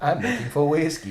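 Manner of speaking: classic cartoon character voice. Going on with the joke after the other speaker's guess: Elmer Fudd voice. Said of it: "It's more like Elmer Fudd".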